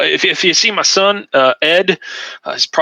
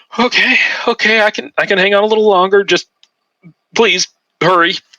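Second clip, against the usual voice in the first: frightened, anxious, high, panicky pleading tone; 6 semitones higher than usual. Voicing a man who starts to panic again, answering the players' calm voice. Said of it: "he starts to panic again".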